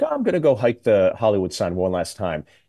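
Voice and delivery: ordinary talk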